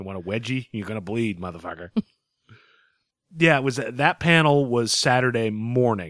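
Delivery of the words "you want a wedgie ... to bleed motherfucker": put-on Boston accent, spoken more quietly. Riffing on a trailer line, doing a mock Ben Affleck Boston accent. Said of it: "just enough of the Boston accent".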